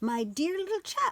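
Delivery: tiny odd creature voice, very high and strange. Reading a little creature's first words to a startled boy: strange small voice. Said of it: "said a strange small voice".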